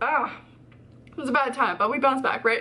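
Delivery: words choked through crying, high breaking voice. Talking to video viewers after recalling hitting rock bottom, crying. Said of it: "I'm crying now".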